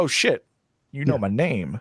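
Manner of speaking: ordinary talk, nothing marked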